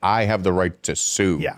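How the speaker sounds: usual speaking voice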